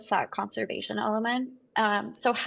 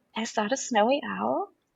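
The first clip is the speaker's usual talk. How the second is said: mock whispering. Retelling asking an expedition leader about a spotted bird: retelling a whisper. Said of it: "I whispered in his ear".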